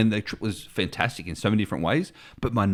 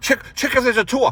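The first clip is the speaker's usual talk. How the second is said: put-on very high, loud, barked delivery; 6 dB louder than usual. Retelling how the driver barked orders: imitating someone barking orders. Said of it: "you're there barking orders".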